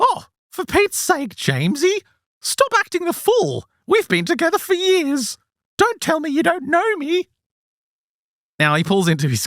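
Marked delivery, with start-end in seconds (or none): 0.0-7.3 very high-pitched eunuch-like voice. Retelling what a strange voice said to a man in his driveway: imitating a high-pitched eunuch-like voice. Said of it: "it kinda sounds like a eunuch".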